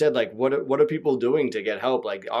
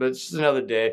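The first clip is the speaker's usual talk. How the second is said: loud, breezy mock casual nonchalance. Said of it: "You said that so casually".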